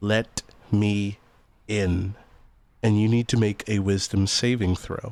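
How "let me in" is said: whispered put-on dwarf voice. Voicing a dwarf whispering into a player's ear: dwarf whispering. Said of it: "you can hear the dwarf in your ear whisper".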